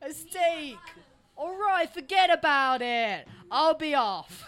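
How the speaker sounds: very loud, high, put-on New Jersey accent. In a scene about sophisticated food, a performer does a New Jersey accent. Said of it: "Like a New Jersey accent".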